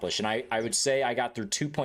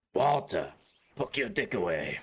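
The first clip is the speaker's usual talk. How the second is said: put-on Eastern European accent, slower. Voicing a character who addresses Walter, in a put-on Eastern European accent. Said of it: "gave him like a Eastern European accent".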